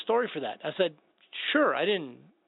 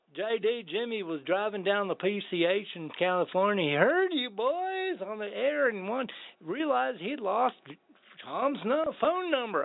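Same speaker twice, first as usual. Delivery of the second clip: put-on Texas accent, pitched higher; 4 semitones higher than usual. Retelling a phone call from Coleman Sisson: Texas accent imitating Coleman Sisson. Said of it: "I can't do it without his accent".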